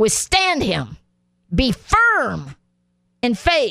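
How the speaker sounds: forceful, emphatic, hammered-home delivery. Speaker repeating a Bible verse a second time, more forceful. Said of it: "I'm going to say it again more forcefully".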